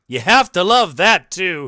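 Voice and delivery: mock sarcastic reading. Reading aloud a newspaper article's line: imitating a sarcastic remark. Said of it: "she says sarcastically".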